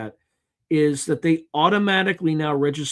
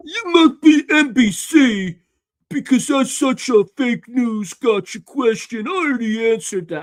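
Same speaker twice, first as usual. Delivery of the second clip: mock arrogant drunken rage, raised and higher-pitched; 9 semitones higher, 5 dB louder than usual. Retelling an answer to a question about the campaign: imitating Keg Seth's drunken rage. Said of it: "in his, like, roid, uh, drunken rage and says".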